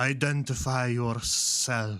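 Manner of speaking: sibilant, hissing snake-man voice. Narrating to the players, voicing a figure who spots them: deep hissing voice. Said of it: "in sort of a, a deep hissing voice".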